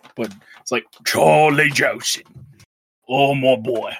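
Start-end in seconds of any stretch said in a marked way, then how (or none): 1.1-3.9 slow, loud British gangster accent, laid on thick. Recalling a PS2 game's mob boss he always imitated: Charlie Joseph mob boss voice. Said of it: "because he had that really thick accent".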